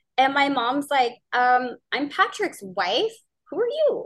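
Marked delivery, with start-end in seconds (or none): 1.9-4.1 genuinely curious, high sing-song voice. Retelling how her mom answered a woman on the phone, mock-curious question. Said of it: "like, curious".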